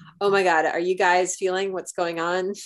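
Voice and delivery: ordinary talk, nothing marked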